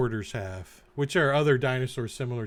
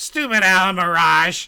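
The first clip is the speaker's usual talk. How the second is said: very loud, high, rough, gruff gnome voice; 6 semitones higher, 10 dB louder than usual. Narrating a story where the gnome turns and speaks, gruff gnome voice. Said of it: "at the gruff voice of the gnome".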